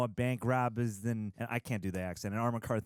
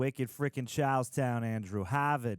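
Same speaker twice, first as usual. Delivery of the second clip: put-on Boston accent. Reacting to a trailer set in charlestown, in a put-on boston accent. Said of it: "I'm not even gonna attempt to do a Boston accent".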